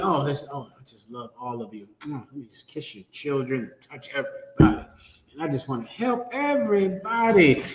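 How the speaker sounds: acted honeyed, soothing, sugary, syrupy sweet talk. Mimicking the new pope's loving words: imitating sweet, smooth talk. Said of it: "the talk is so sweet".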